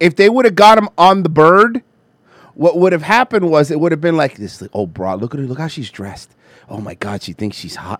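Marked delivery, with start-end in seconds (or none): 4.7-8.0 low, catty, gossipy tone. Imagining leaked off-air footage, imitating Don Lemon: catty Don Lemon impression. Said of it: "Being catty".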